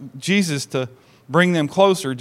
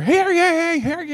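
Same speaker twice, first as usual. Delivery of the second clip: acted, very high, drawn-out proclaiming scream. Retelling how a man opened a door and announced: imitating someone screaming. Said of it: "and he begins screaming".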